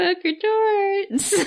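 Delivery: sad-sounding cheer. Cheering the Patreon name after a disturbing episode: sad-sounding cheer. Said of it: "never heard you sound more sad while cheering".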